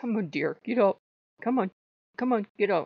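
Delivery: kind, patient, nice, gentle voice. Retelling Odin urging the speaker to get up: imitating Odin's nice voice. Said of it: "it's the nice Odin voices".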